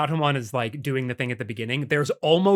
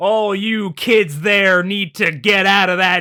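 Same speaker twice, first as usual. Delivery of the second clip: loud, heavily exaggerated, thickly laid-on cowboy voice; 5 semitones higher, 7 dB louder than usual. Quoting an actor's line from a show, doing a heavy John Wayne impression. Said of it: "flanderization of a John Wayne impression".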